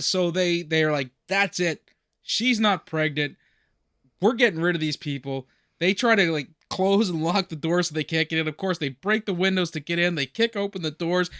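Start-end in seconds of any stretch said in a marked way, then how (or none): none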